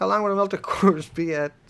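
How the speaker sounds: words broken up by laughter. Reading a question about melted cores, laughing while talking. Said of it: "I'm just laughing".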